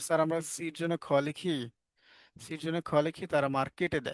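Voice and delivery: ordinary talk, nothing marked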